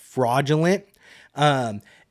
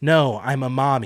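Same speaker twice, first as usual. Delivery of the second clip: mocking cutesy sing-song delivery. Retelling a reality show moment, imitating a cast member's cutesy "I'm a mommy". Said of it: "Why are you saying it that way?".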